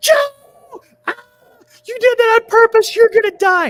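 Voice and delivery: put-on screaming. Retelling his reaction after the speaker shot him, imitating a scream. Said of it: "And he screams".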